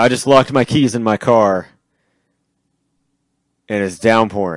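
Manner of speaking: beaten-down, hopeless, defeated, deflated voice. Retelling a donut-shop scene, quoting Mr. Show in a mock-defeated voice. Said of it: "in his defeated voice".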